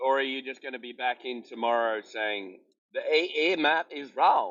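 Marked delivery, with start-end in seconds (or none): 2.9-4.5 fake American accent, drawn out. Mocking what another speaker will say tomorrow: put-on American accent. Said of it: "that was the best American voice I ever heard".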